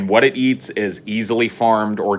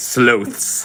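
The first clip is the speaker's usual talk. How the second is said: sudden British-sounding pronunciation slipping in on sloths; 2 semitones higher than usual. Repeating a word just said, joking about turning british: british accent. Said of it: "I think I'm turning British".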